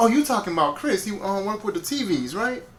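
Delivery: high, sing-song voice of sudden realization.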